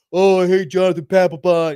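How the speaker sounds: loud put-on Boston accent. Retelling how other Red Sox fans reacted when their closer left; imitating Red Sox fans' accent. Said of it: "they're all in their accent".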